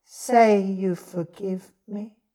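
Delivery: thin, flat, monotonous voice. Reading a ghost's words to the terrified narrator: thin, monotonous voice. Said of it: "the thin, monotonous voice went on".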